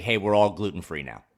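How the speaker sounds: plain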